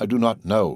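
plain

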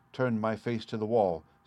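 ordinary delivery

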